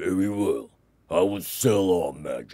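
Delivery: plain reading voice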